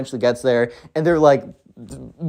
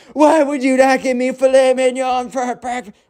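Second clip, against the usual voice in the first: put-on shrill, very high, angry, bratty kid yell; 9 semitones higher than usual. Retelling a story, voicing a spoiled kid talking back to his mom: imitating a yelling kid. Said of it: "the spoiled kid is yelling at her".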